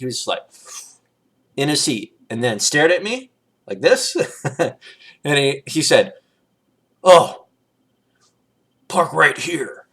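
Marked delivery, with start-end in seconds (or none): 7.0-9.7 weird, demented creature voice, drawn out. Speaker retelling what a strange guy said to them, weird Cookie Monster voice. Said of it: "and a weird little voice. It was like the Cookie Monster".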